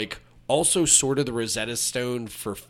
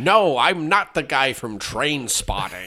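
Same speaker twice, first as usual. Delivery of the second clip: put-on loud, pushed, poorly done American accent; 3 semitones higher, 5 dB louder than usual. Imitating an actor playing an American soldier: Ewan McGregor's bad American accent. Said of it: "his accent hasn't gotten any better".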